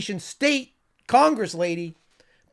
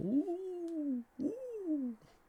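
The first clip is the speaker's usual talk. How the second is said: very soft, hushed, drawn-out, raspy ghost ooh, pitched up; 7 semitones higher, 15 dB quieter than usual. Moaning like a ghost, in a raspy ghost voice. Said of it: "I make a pretty good ghost voice with this this raspy R F K".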